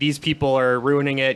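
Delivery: normal talking voice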